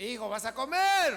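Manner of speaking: loud, calling-out voice.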